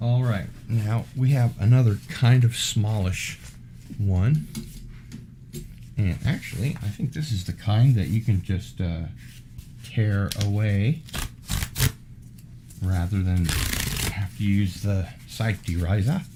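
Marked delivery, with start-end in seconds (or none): 9.8-11.0 slow, drawling, bad Australian accent. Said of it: "That was a horrible Australian accent".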